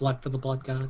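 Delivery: very low, soft muttering under the breath. Voicing a character who repeats a phrase: mumbling under breath. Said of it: "Thrash is mumbling that under his breath".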